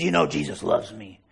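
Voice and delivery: odd, strange, unhinged, crazy-sounding voice. Retelling what a man outside a coffee shop said: imitating a crazy voice. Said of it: "In this crazy voice".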